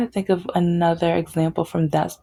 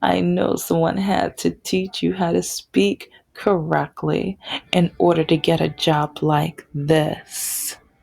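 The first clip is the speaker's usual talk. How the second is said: ordinary talk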